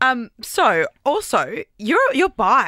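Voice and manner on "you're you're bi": eager, delighted, thrilled, excited exclamation. Asking the other speaker about being bi: excited. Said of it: "like I was so excited".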